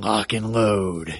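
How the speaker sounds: put-on deep announcer voice. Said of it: "my name said in the deep guy voice".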